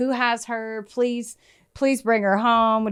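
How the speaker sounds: mock pleading, put-on begging. Recounting what a man said on camera, retelling someone begging. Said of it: "he's begging".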